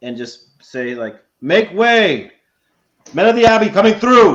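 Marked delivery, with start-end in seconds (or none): 1.4-4.3 very loud, high-pitched, ringing, booming proclamation shout. Using a spell to clear the crowd: booming shout. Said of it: "I'm gonna boom out my voice".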